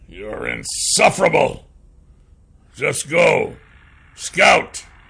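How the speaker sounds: gruff voice through clenched teeth. Narrator voicing the old dwarf ordering his companion to scout, through clenched teeth. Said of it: "said through clenched teeth".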